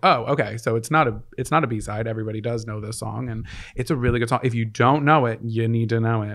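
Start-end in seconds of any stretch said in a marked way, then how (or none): none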